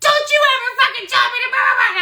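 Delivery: put-on, very high, swooping furious screaming tirade. Recounting losing it at the man pushing the speaker, retelling a furious scream. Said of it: "I was like screaming, like screaming at him like this".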